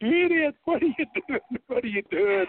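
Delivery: put-on screaming, very high-pitched. Retelling how a girl reacted to her car being wrecked: imitating a girl screaming. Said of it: "The girl was just screaming at him".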